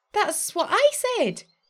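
thrilled, eager, excited shout, very high. Reading a story aloud, Gemma answers a grumpy fairy: excited yell. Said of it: "yelled Gemma excitedly".

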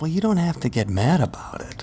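kinda snotty, put-out tone. Imitating Siri answering someone who says something vulgar: snotty Siri voice. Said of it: "when Siri gets kinda snotty with you".

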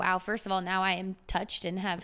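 plain

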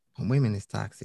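plain

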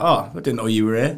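mock-sarcastic tone. Retelling what a man said when she came up to him, imitating a sarcastic remark. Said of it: "he was being sarcastic".

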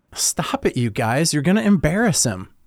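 said with a giggle through the words. Narrator reads Jill running across the track to the narrator, giggling. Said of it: "Jill giggled".

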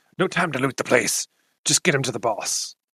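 scratchy-throated voice, every word scraped out. Storyteller voicing the character Blagmar in a scratchy Blagmar voice. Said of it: "he speaks in a voice of a scratchy like human voice".

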